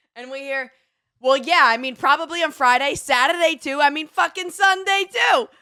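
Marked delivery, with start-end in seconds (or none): 1.2-5.4 put-on Jersey accent, pitched way up, loud. Retelling a stranger's phone call overheard at the airport: imitating a Jersey accent. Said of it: "word that you can say with a Jersey accent".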